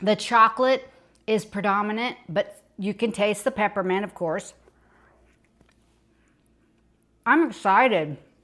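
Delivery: speaking with mouth full of food. Tasting a recipe while recording; talking with mouth full. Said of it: "Excuse me for talking my mouth full".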